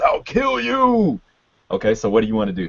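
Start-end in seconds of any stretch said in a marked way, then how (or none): 0.0-1.2 enraged, very high, roaring ape voice. Narrator voicing an ape with both arms raised: roaring ape voice. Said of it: "you see him roar, and that's when he says".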